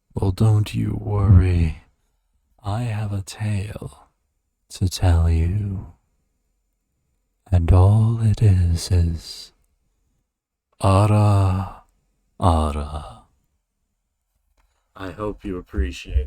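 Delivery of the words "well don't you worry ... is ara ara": storytelling narrator voice, lower and louder. Answering a viewer's request to say something: narrator's voice. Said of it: "say something in my narrator's voice".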